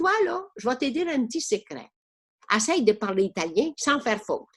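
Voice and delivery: normal talking voice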